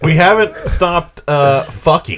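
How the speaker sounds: shrill, booming, very high sing-song voice, swooping pitch. Joking about people who haven't stopped repopulating: William Shatner impression. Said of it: "I like how you're doing William Shatner".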